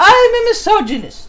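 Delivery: exaggerated theatrical British accent. Diving into a text, performing it in an over-the-top British accent. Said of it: "My overly over-the-top dramatic British accent".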